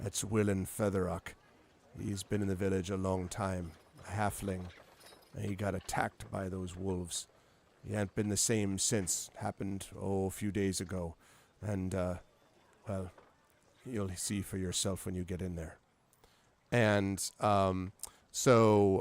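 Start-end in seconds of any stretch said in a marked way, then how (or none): 0.0-15.8 hushed, lowered voice, said as an aside. Storyteller voicing a character who speaks to the listener, in a lowered voice. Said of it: "kind of lowers his voice and says".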